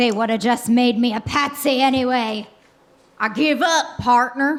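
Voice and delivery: put-on Texan accent. Surrendering in a comedy skit, slipping into a Texas drawl. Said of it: "Did your accent just change to a Texas drawl?".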